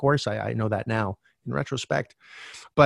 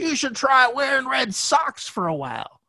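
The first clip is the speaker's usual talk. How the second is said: high, slow, eerie shouted delivery. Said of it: "And he says".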